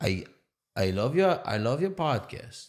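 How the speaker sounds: put-on poorly done Yiddish accent. Retelling what a lady who pulled the speaker over said, bad Yiddish accent. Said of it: "I'm gonna do a Yiddish accent".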